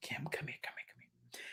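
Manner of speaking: faint, breathy, barely audible whisper. Retelling a dying father's last words to his daughter: imitating a whisper. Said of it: "he would just whisper".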